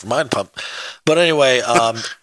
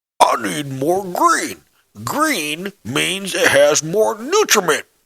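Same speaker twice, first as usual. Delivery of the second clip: put-on slow, drawn-out, high old man voice; 7 semitones higher than usual. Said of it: "That's almost exactly to the T how he sounded".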